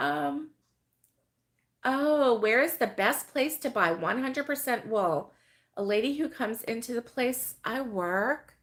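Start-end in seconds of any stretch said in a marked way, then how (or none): none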